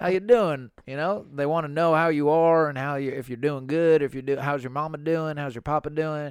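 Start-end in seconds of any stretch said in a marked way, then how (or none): 0.0-0.7 mock friendly tone, higher and louder. Describing people in the South, imitating friendly Southerners. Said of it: "people who are really friendly".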